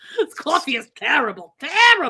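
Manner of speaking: put-on loud, high Boston accent. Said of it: "Christine doing a Boston accent".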